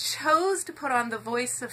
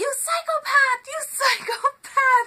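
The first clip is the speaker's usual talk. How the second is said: put-on shrill, very high screaming; 14 semitones higher, 5 dB louder than usual. Storyteller recounts hearing a boy scream at another boy, retelling a boy screaming. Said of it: "this boy screaming out".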